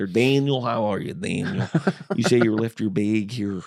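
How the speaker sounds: put-on Chicago accent in a cop voice. Recalling calling Chicago PD about a lost bag, as a Chicago cop character. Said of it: "doing like this Chicago P D character".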